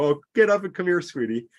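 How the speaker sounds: high-pitched voice giggling through the words. Acting out a mother whose child just fell: giggling mother. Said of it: "the mother can giggle and go".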